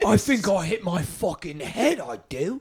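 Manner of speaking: put-on drunk English man's accent, high and slow. Retelling what a drunk English guy said after falling: imitating a drunk English guy. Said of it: "Just screaming at us, just hammered".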